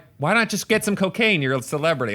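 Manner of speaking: plain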